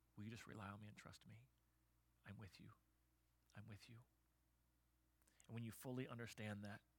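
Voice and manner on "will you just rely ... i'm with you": put-on whisper, quieter. Voicing God speaking to someone through hard times: whispering as God. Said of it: "he's there whispering".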